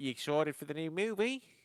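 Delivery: put-on Australian accent. Retelling what a stranger on a cruise said: imitating an australian accent. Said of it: "Ah, Australian".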